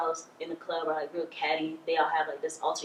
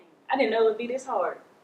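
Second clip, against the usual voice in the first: holding back tears, tearful, raised and high; 6 semitones higher, 5 dB louder than usual. Opening up about a difficult past to a listener: holding back tears. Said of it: "Don't cry".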